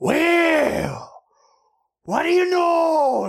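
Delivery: put-on very loud, very high, very slow drawn-out yell. Speaker retells a guy's reply while talking about Star Wars memes, imitating someone shouting loudly. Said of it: "took a beat and just really loudly".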